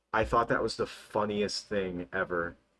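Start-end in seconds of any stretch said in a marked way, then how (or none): none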